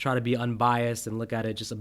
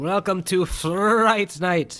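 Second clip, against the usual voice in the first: put-on Transylvanian-accented speech; 8 semitones higher, 5 dB louder than usual. Opening a review of the film, the speaker quotes Fright Night in a put-on accent. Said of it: "What kind of accent was that?".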